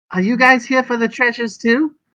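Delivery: tiniest, very high little voice. Narrator voices a telepathic voice the players hear, in the tiniest little voice. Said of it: "in this tiniest little voice".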